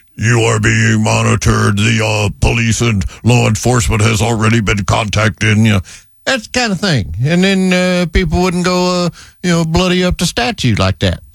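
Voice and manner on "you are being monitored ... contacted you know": deep, authoritative voice. Imagining a warning voice at a defaced statue, deep authoritative Optimus Prime voice. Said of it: "a very deep, authoritative transformer kind of a voice".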